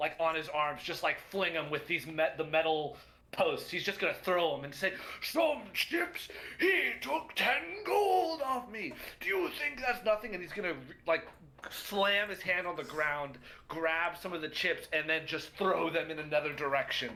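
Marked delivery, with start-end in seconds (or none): 5.2-10.3 big booming giant voice roar, pitched up. Narrating a character flinging ropes at metal posts, then speaking in his booming voice. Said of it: "In his booming voice".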